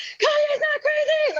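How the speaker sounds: re-enacted scream. Recalling an argument with the documentary filmmaker, re-enacting own screaming. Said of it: "so I'm like screaming".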